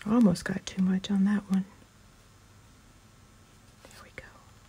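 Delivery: hushed whisper. Gluing pieces of a little box while talking the viewer through it; whispering. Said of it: "I don't know why I'm whispering".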